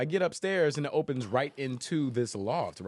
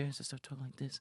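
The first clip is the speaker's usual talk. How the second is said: put-on whispery, hushed, breathy childlike baby voice; 12 dB quieter than usual. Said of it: "I start doing my Baby Voice".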